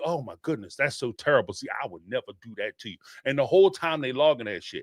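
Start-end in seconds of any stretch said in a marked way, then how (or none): 0.1-3.0 two-faced, manipulative, falsely sympathetic comforting tone. Acting out a partner answering a confession: imitating a manipulative partner. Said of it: "They'll tell you".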